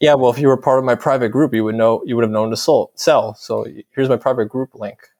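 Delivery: ordinary talk, nothing marked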